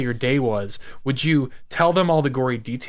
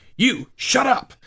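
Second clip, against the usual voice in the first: acted-out screaming, way up high in pitch; 11 semitones higher than usual. Retelling an actress's first line in a movie: imitating Carrie Ann Moss screaming. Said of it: "she's screaming at me".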